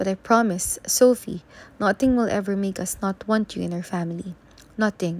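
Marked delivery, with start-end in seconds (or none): none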